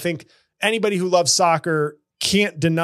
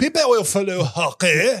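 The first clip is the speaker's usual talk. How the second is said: put-on French accent. Continuing the hockey league's boast in a put-on french accent. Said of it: "a French accent, not a Canadian accent".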